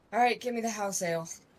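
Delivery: spoken through a sigh. Giving in and ordering the house ale: sighing. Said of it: "just gonna just sigh and be like".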